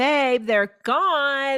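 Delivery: put-on hollered yell, drawn out. Telling a story, she re-enacts calling out to him, retelling her own yelling. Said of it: "And I'm like yelling at him".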